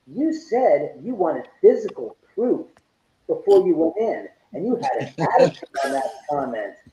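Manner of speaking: pointed, accusing, confrontational tone. Retelling what was said to a friend: imitating own accusatory tone. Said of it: "an accusatory tone".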